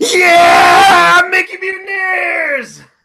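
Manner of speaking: very loud, very high shouted yell. Doing the show intro for the other speaker, yelling the show intro. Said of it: "I'm just gonna yell Mickey Mutineers".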